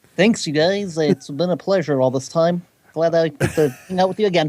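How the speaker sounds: geeky, nerdy put-on delivery. Thanking the hosts for having them back: put-on nerd voice. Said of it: "Thank you for using the nerd voice".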